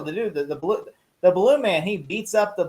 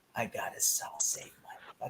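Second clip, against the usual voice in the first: put-on smoldering voice, lower and quieter; 8 semitones lower, 15 dB quieter than usual. Imitating Bruce Wayne's smoldering delivery from the show. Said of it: "his smoldering".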